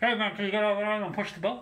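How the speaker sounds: announcer voice.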